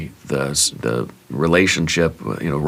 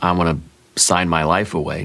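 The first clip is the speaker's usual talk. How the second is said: normal talking voice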